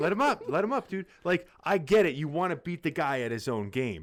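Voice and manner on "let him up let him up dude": high, insistent shouting, over and over. Retelling own words shouted during the fight: imitating own past yelling. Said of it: "I'm just".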